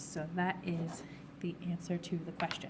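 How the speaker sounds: soft whisper with the voice failing. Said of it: "I'm losing my voice".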